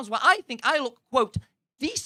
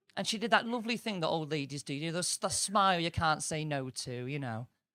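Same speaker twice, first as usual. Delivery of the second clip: plain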